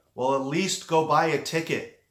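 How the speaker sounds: loud, booming godlike voice from above. In a story of someone praying, a voice answers from the heavens, booming. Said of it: "a voice booms from the heavens".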